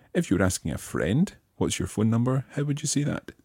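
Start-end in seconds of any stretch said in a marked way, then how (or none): none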